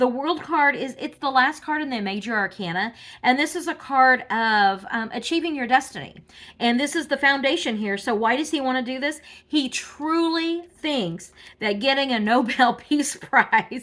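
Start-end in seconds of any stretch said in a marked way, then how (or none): 9.5-13.8 slow speech, laughing through the words. Reading tarot cards for someone, laughing while talking. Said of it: "I can't say this without laughing".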